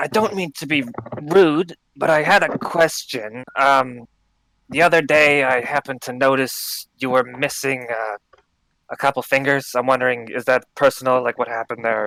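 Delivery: hushed voice. A role-play character asks another a question while others are distracted, in a hushed voice. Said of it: "in a hushed voice".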